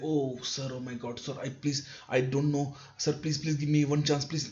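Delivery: pleading, grovelling, over-apologetic begging tone. Showing how not to answer a question in a formal conversation, mock begging. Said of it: "you're not in a begging begging conversation".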